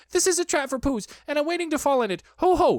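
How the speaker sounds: rapid, very fast, squeaky gabble, pitched way up. Reading Piglet's line as Christopher Robin comes along, very quick and squeaky. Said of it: "he said very quickly and squeakily".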